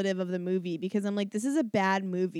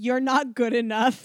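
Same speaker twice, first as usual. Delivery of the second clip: put-on yelling; 3 semitones higher, 4 dB louder than usual. Retelling a scene where she yells at him for cheating, retelling a yell. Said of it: "She literally yells".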